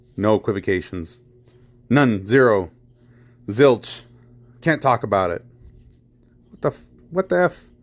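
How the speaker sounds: rising, emotional, upset and fed-up exasperation. Ranting about gun politics, then apologizing: emotional and irritated. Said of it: "I am a little emotional about this".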